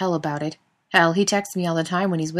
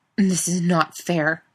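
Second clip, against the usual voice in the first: through clenched teeth, much slower. A narrator reads a character's protest after he resists calling Jared, through clenched teeth. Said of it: "he said through clenched teeth".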